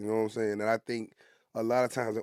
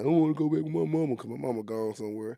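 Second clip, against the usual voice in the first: mock crybaby whine with crying; 3 semitones higher than usual. Retelling being a crybaby as a kid wanting his mama: imitating whining and crying. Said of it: "I'm whining and crying".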